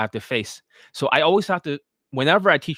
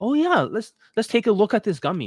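mock courteous, humouring, polite, pitched up; 7 semitones higher than usual. Acting out a reluctant buyer who doesn't want to hurt feelings: imitating someone smiling politely. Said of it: "So he's smiling".

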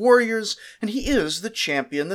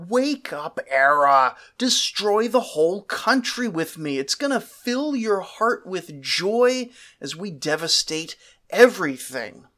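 plain

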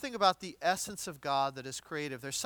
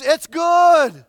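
very loud, booming, high announcer scream, "good" stretched; 10 semitones higher, 18 dB louder than usual. Retelling a game-winning field goal as it clears the goalpost, as a screaming sports announcer. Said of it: "the sports announcer screams".

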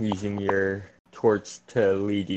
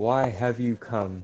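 whispered voice. Voicing a creature speaking into the players' heads: whispering. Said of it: "you just hear whispered".

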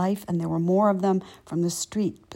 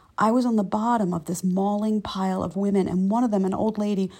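ordinary talk

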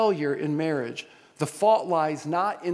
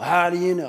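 confrontational, challenging tone with attitude; 4 dB louder than usual. Retelling a question a man once asked: imitating someone with attitude. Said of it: "Kind of with that attitude".

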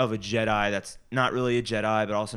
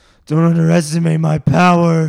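whiny put-on character voice, pitched higher, louder; 7 semitones higher, 14 dB louder than usual. Talking about the movies, you quote a line in your best whiny Anakin impression. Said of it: "It's my best Anakin impression".

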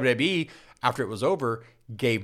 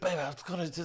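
vindictive, angry, pitched-up delivery; 5 semitones higher, 9 dB quieter than usual. Retelling someone's angry impression: imitating a vindictive Dusty Rhodes impression. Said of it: "he just starts giving that vindictive tone".

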